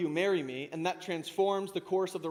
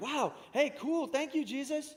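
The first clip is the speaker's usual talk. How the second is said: slow, wowed, grateful, impressed tone, pitched up; 7 semitones higher than usual. Acting out disciples reacting to Jesus: imitating impressed disciples. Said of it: "the disciples afterward would have been like".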